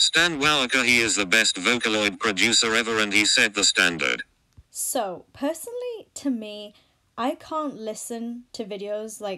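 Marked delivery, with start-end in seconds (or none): 0.0-4.2 very low, very loud robotic text-to-speech machine voice. Demonstrating how videos with computer-generated narration sound, in a text-to-speech robot voice. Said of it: "it kind of sounds like this".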